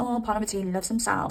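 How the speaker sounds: ordinary talk, nothing marked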